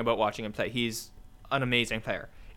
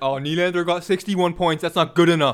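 put-on caveman voice, very loud and high; 6 semitones higher, 8 dB louder than usual. Mocking people who only look at raw points: mocking Neanderthal voice. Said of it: "I love your Neanderthal accent so much".

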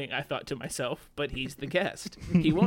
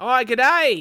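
put-on Australian accent, higher and louder; 8 semitones higher, 10 dB louder than usual. Reading a listener letter aloud that asks for an Australian accent: [name]'s Australian accent. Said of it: "Cue [name]'s Australian accent".

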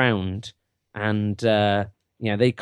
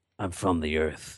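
put-on gravelly voice, much lower and quieter; 6 semitones lower, 8 dB quieter than usual. Suggesting how someone could voice an earthy character covered in dirt, really gravelly voice. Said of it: "And like really gravelly".

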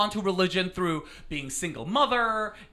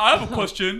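mock masculine voice; 2 semitones higher, 5 dB louder than usual. Podcast host retells what producer Tommy said earlier: imitating Tommy as a straight guy. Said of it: "That's my impersonation of a straight guy".

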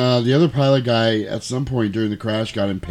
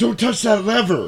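mock shrill, very high-pitched scream; 11 semitones higher than usual. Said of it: "he's screaming like there's a pipe sticking".

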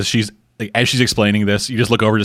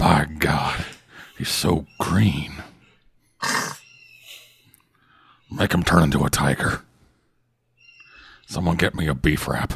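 animated, low, swooping put-on voice; 4 semitones lower, 4 dB quieter than usual. Joking about a show's character, slipping into a Dan McMahon voice. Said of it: "slipped into your Dan McMahon voice".

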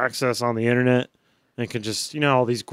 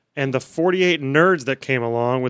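plain

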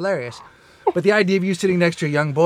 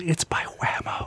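put-on whisper, quieter; 8 dB quieter than usual. Adding a joke line a pervert says next: imitating a whisper. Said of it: "And then he whispers".

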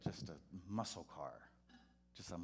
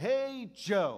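very high, very loud, cheesy preacher voice; 13 semitones higher, 15 dB louder than usual. Retelling greeting a man named Joe each Sunday, corny preacher voice. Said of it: "like a corny preacher does".

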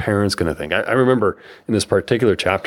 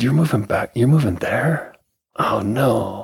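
mock disappointed old man voice, higher; 3 semitones higher than usual. Retelling a grandpa's overheard remark to the parents: imitating disappointed grandpa. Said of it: "the disappointment in my grandpa's voice".

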